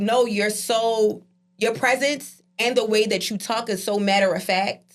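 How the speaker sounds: usual speaking voice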